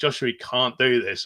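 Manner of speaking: ordinary talk, nothing marked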